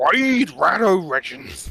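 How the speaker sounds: put-on cartoon dog voice. Saying the game's name quickly after being asked to: Scooby-Doo voice. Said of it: "you need to say it like you're Scooby-Doo".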